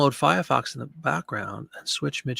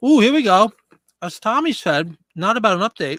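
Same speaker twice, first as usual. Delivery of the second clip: pitched-up voice talking through a mouthful of food; 7 semitones higher, 4 dB louder than usual. Reading out tech support replies, the speaker talks while eating. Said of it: "I'm sorry, I'm sitting here eating".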